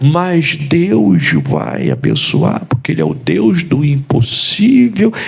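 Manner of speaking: serene, creaky, reassuring preacher tone, slow and swooping. Retelling how a church brother spoke, sounding like a priest: imitating calm priest-like speech. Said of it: "parecia até um padre".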